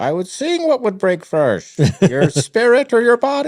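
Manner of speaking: very high, loud, shrill, swooping villain voice, badly done. Comparing the training to Bane breaking Batman, bad Bane impression. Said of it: "that was a terrible impression".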